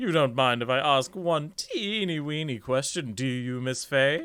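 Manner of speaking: condescending tone. A character putting a question to a woman: condescending tone. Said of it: "he's got that condescending tone in his voice".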